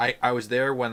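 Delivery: normal talking voice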